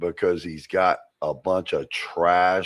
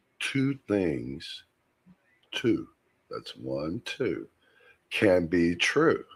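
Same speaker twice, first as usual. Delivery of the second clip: talking down, slow and deliberate, each word spaced; 4 dB quieter than usual. Addressing the haters directly, explaining a point to them, talking slowly. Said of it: "I'm going to talk slow for you".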